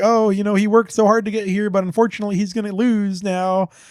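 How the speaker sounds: high, loud, belittling mocking tone. Retelling a game character's taunts at the player: imitating mocking trash talk. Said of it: "he's just trash talking you under his breath".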